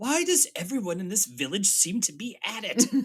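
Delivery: acted, high, swooping, at-the-end-of-tether outburst. Speaker quoting a favourite line from the show: imitating Barnaby losing it. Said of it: "just kind of loses it and just goes".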